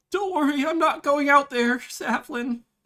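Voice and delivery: loud, very high-pitched character voice. Voicing Ifrash, who stays back during a fight: voicing Ifrash. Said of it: "who is just going to stay high and be like".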